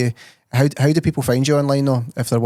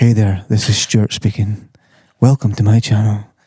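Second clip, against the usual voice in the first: raised, put-on ASMR voice; 2 semitones lower, 5 dB louder than usual. Joking about doing voice work, trying a put-on asmr voice. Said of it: "something like A S M R".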